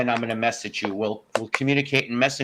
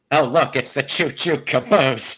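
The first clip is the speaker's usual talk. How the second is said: slow, drawn-out delivery; 4 dB louder than usual. Doing a bad impression of Paul Lynde for the others: Paul Lynde impression. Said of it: "Last Paul Lynn".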